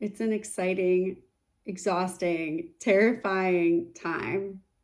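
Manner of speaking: slow, weighted, each word drawn out.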